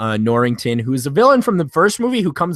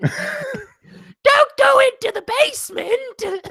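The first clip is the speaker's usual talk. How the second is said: comic, very high man-as-woman falsetto. Mocking a co-host's Keira Knightley impression with a Monty Python woman voice. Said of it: "Monty Python uh, when they're playing a woman".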